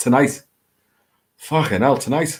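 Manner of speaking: thick Liverpool accent. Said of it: "my Scouse accent is really coming out".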